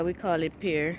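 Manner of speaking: ordinary delivery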